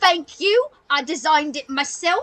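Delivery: hearty, boisterous street-vendor character voice. Voicing the meat seller thanking customers: boisterous voice of a small woman. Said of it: "she goes".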